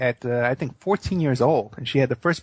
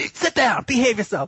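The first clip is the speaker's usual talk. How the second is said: put-on high, stern, scolding shout; 9 semitones higher than usual. Retelling how dad broke up fights on the subway: imitating dad yelling. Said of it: "start yelling at them".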